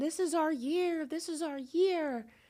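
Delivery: high, play-acted excited screaming like cheering fans. Retelling excited fans before the game: imitating fans screaming. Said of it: "you could hear them screaming".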